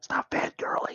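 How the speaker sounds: soft, hushed whisper. In the game, a player whispers to the other players, whispering. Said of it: "I whisper to you guys".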